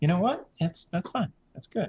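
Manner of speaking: put-on fast, acted girly voice. Answering another player's question in character: girl voice. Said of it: "the girl voice".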